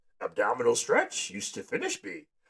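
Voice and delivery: pitch rising then drifting. Showing that an impression of a boss drifts into Yoda. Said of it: "starting to turn into a Yoda impression".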